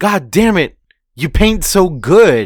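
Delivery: loud, high-pitched hollered yell. Discussing a scene, the speaker acts out a character fleeing with Momonosuke, imitating yelling. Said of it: "he's just yelling".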